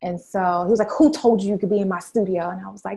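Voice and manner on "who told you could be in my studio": put-on mean, powerful, domineering man's tone. Retelling what a man said on finding the speaker in his studio, imitating a mean, powerful man. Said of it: "he was so mean and powerful".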